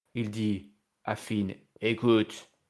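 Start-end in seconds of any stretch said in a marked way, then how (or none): 1.8-2.4 put-on big gruff voice. Retelling what a wrestler told his rival after the match: imitating Damian Priest's big voice. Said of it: "avec sa grosse voix là comme ça".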